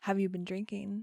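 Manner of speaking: ordinary talk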